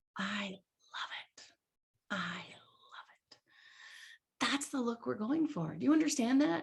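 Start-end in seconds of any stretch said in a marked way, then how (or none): 0.1-3.3 very slow, very quiet, hushed half-voiced whisper. Retelling a top seller's instant answer to a question: imitating a half whisper. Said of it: "in a half whisper, whisper, half voice".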